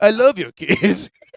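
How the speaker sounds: high, creepy, predatory voice. Doing a joke bit on the show, in a mock pedophile voice. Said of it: "Your pedophile voice".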